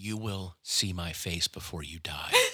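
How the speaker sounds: mock menacing, very slow, sinister delivery. Retelling the partner's threatening note after calling it sinister: imitating a sinister threat. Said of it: "you turned into Hannibal Lecter".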